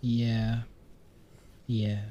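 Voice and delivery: soft, sad, deflated, downcast voice. Asked by another speaker if they're good, a speaker answers: sad. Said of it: "Why do you sound sad all of a sudden?".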